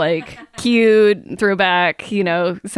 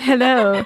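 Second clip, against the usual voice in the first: mock seductive, sexy voice, pitched higher; 5 semitones higher than usual. Trying out a new voice for the others: put-on sexy voice. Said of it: "This is my sexy voice".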